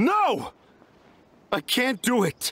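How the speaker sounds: loud shouting. Refusing when the others urge help with the carvings: shouting. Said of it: "Why the f*** are you shouting at me?".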